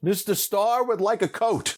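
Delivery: mock, very high, shrill, ringing yell. Retelling how a man yelled about the speaker: retelling a yell. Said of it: "And then he yells".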